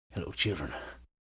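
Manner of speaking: eerie, weird, creepy, very quiet hushed voice. Setting up an overhead camera shot and greeting viewers jokingly: weird creepy voice. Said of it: "a little weird, creepy".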